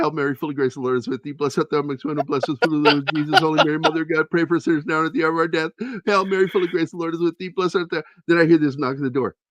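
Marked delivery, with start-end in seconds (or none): 0.0-8.0 mock crying voice, higher pitched. Speaker recounts sitting there praying the hail mary, retelling crying while praying. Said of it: "I'm sitting there crying and I go".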